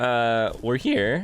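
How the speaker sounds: cracked voice breaking mid-phrase. Gamer welcoming viewers back to Fallout 4, voice cracking. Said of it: "My voice just cracked".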